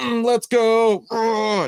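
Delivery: very high-pitched, strutting, boastful crowing cheer. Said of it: "my Mister Olympia pose".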